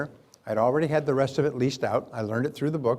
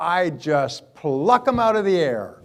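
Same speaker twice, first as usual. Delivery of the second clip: smug, superior, loud, slow, arrogant tone; 4 semitones higher, 5 dB louder than usual. Speaker retells how she answered a question; mock-arrogant voice. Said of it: "she says with her arrogant voice".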